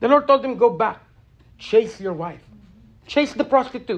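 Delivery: tearful voice, words welling up, starting to cry. A speaker retelling a scripture story, starting to cry. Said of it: "I don't know why I'm starting to cry".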